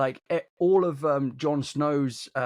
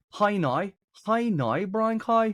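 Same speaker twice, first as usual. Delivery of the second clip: Northern Irish accent, much higher pitch; 7 semitones higher than usual. Demonstrating a drama-school speech exercise, in a Northern Irish accent. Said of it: "for Northern Irish ... But you say it like".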